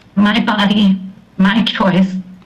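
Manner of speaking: ordinary talk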